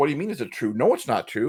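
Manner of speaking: affronted, offended, put-out tone. Retelling a girl's reply after being asked if an insult was true: imitating someone offended. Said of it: "she got all offended, like".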